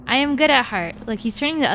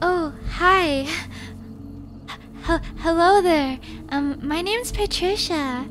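put-on soft, slow, lifted, raised girl's voice; 6 semitones higher, 4 dB quieter than usual. Describing how a girl's voice changes on meeting a cute boy, imitating a softened, raised voice. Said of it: "you like soften or raise your voice".

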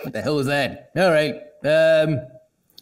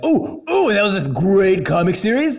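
eager, excited, gushing tone with raised pitch; 7 semitones higher, 4 dB louder than usual. Imitating how he talks about Ghostbusters: imitating himself getting excited. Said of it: "I get really excited when I talk about Ghostbusters".

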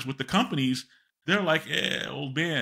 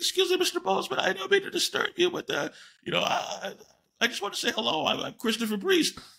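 put-on voice jumping two octaves, much higher. Recounting introducing yourself to someone, imitating own voice jumping two octaves. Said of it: "my voice goes up 2 octaves".

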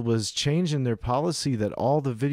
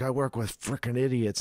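muttering under the breath; 4 dB quieter than usual. Retelling what a guy said, the speaker mutters it under his breath. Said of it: "He's saying something under his breath".

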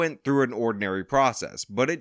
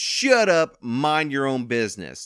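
put-on Southern US accent, dismissive, brushing-off tone. Retelling what a man at a demolition site said, in a put-on southern accent. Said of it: "why did I give them a southern accent?".

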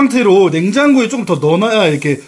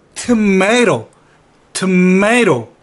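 tomato pronounced the American way. Explaining how tomato is said in America: American pronunciation of tomato. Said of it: "미국식 발음은".

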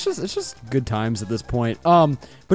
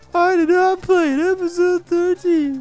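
mocking imitation, pitched much higher; 12 semitones higher than usual. Repeat the other person's words back until they tell you to stop, in a mocking imitation. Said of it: "Stop mocking me!".

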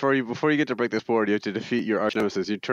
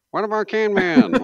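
shrill, high, loud muffled voice, as inside a can; 12 semitones higher, 6 dB louder than usual. Retelling what Chad was saying among the girls, imitating Chad's muffled voice. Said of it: "it sounds like it's coming from like a garbage can somewhere".

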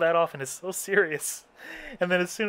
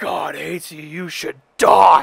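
put-on demonic-sounding voice, louder; 10 dB louder than usual. Retelling what a creepy game villain said: imitating a demonic-sounding voice. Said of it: "demonic sounding".

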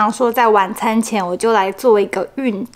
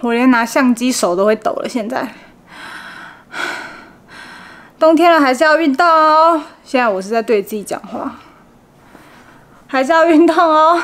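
panting, breathless, gasping, much higher; 3 semitones higher than usual. Vlogger says goodnight to viewers after exercising: out of breath, panting. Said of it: "在我气喘吁吁、上气不接下气的情形之下".

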